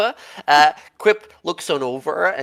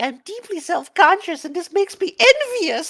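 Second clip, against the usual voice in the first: whispering, pitched higher. Voicing a creature's quip heard by the players: whispered. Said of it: "whispered or something like".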